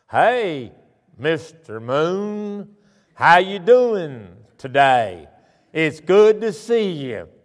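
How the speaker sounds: long, very slow drawl, "Moon" drawn out. Retelling how a school friend's father talked: imitating Roy's slow drawl. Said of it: "And Roy talked like this".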